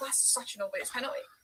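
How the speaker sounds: plain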